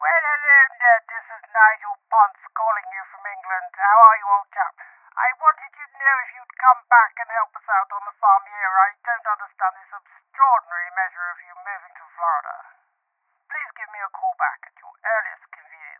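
arrogant put-on character voice. Nigel Ponce leaving a phone message for Ned; arrogant Nigel Ponce message. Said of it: "He left me this kind of arrogant message".

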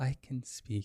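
soft, disembodied voice with no mouth behind it. Narrating a scene, giving a mouthless voice its line: disembodied voice. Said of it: "you hear a voice with no mouth attached to it".

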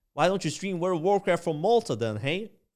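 put-on convincing American man's accent. Retelling what an American guy asked him, the speaker does a put-on American accent. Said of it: "That was a really good accent".

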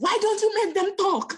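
shrill, high shout, pitched way up. Retelling a time they shouted a question at god, retelling a shout. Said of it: "the time I shouted".

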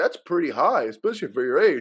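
put-on nonchalant tone. Retelling what the hygienist said about the blood pressure: imitating a nonchalant remark. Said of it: "so nonchalant".

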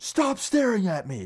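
mock furious, high, slow, dragged-out scream. Retelling how a classmate screamed at the speaker in class, retelling a scream. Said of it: "Like he screams it".

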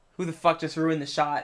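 normal talking voice

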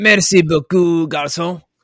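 bad French accent, very loud and high. Answering another speaker's playful question: bad French accent. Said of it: "I can't even do a French accent".

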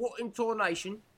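put-on British accent. Imitating British people saying a stock phrase: put-on British accent.

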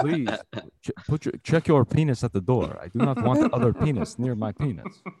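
put-on Eastern European accent. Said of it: "faking an Eastern European accent".

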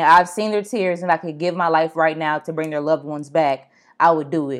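ordinary delivery

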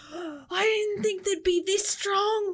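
screaming in a character voice. Voicing a stabbed enemy calling over to the other two: screaming in character. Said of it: "he screams over to the other two".

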